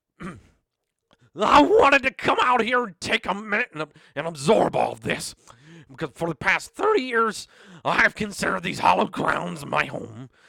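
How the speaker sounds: mock munching sounds while talking. Performing a speech as if The Undertaker were a Cheeto muncher: Undertaker munching Cheetos. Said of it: "What if The Undertaker was a Cheeto muncher?".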